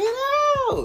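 put-on screaming. Telling how she suddenly started screaming at him to get out: retelling a scream. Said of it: "she just starts screaming".

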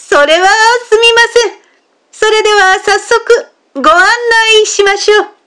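delighted, very high-pitched, happy voice. An honest fisherman, taken in by an ugly man's lie, replies: happy. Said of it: "嬉しそうに言った".

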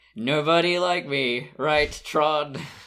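put-on sarcastic voice. Retelling what he said to tron, mimicking salty sarcasm. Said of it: "He's being a little salty and sarcastic".

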